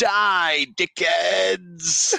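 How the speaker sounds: quick, high, put-on shout from the background. Retelling a line someone shouts in a movie background: imitating a background shout. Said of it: "someone in the background goes".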